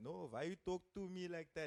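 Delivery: put-on Indian accent, high-pitched. Retelling a confrontation, voicing Jimmy's reply in the speaker's best Indian accent. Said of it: "That's my best Indian accent".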